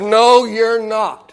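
severe, no-nonsense, very stern and firm. Preacher retells a woman's reply after he says he was sent to preach: imitating a very stern voice. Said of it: "she said with a very stern voice".

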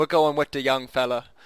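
put-on English Cockney accent. Picturing an actor playing a team boss: Michael Caine impression. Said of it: "have Michael Caine play, uh, Bob Harlan and be like".

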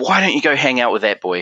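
normal talking voice

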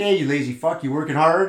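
put-on teasing sarcasm. Retelling ribbing a regular customer: imitating sarcastic ribbing. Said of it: "sarcasm relies heavily on facial expressions".

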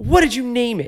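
put-on very high-pitched, fuming, pissed-off voice. Retelling how the dad reacted to the new dog: imitating a pissed-off dad. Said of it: "he's so pissed off".

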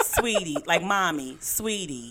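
slow, patronizing, condescending sweet talking-down tone. Retelling how her son talks down to her: imitating her son talking down. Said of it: "I feel like he talking down to me".

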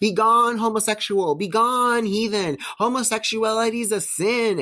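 mock, very high, slow, dragged-out screaming. Retelling a man walking away from you while screaming at you, imitating someone screaming.

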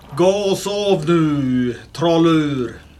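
voice of a giant. Asked how it sounds in giant, a player answers, speaking in giant language. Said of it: "What does that sound like in giant?".

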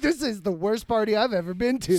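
normal talking voice

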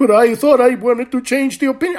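exaggerated sarcastic put-on. Acting out someone driving through a red light: sarcastic exaggerated mock voice. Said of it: "I'm being sarcastic. I'm being exaggerated".

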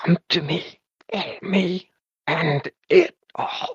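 strangled, choking speech. Describing a voice that responds, the speaker imitates it in a choking voice. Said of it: "responding in kind of like a choking voice".

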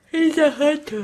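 yawning while speaking. Revealing the answer during a show segment, yawning while speaking. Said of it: "I yawned right as I said it".

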